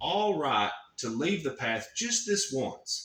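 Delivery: ordinary delivery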